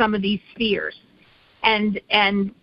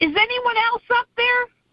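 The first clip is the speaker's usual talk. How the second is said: put-on very high yell, pitched upward; 14 semitones higher than usual. Telling a story where a man looks up and yells, retelling a yell. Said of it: "he looked up and he yelled".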